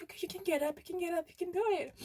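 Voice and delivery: high, fast, cheering, encouraging tone.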